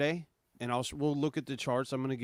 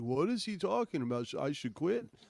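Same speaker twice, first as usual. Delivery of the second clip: puzzled, confused, baffled, caught-off-guard tone; 3 semitones higher than usual. Imitating how some viewers would react: imitating a confused viewer. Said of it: "some people would be like".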